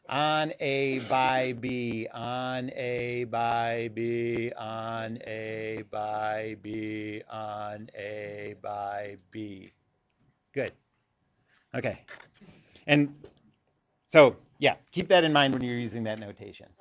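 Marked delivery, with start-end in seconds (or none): 0.1-9.7 very slow, droning, hypnotized zombie monotone. Demonstrating how to keep repeating a phrase, like a hypnotized zombie. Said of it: "like you're getting hypnotized, like a zombie or something".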